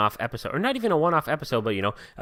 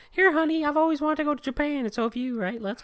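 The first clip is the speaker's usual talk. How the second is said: put-on female voice, pitched much higher. Imagining a trip with loved ones, speaking in a put-on woman's voice. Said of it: "I gave me her voice".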